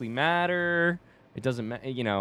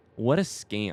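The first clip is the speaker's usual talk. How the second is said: play-acted low, heated, upset grumble; 4 semitones lower than usual. Quoting a kid bummed about his cross country result, retelling words said with heat. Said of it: "he says it with like some heat in his voice".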